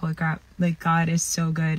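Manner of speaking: normal talking voice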